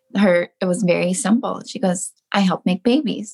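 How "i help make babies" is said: ordinary talk, nothing marked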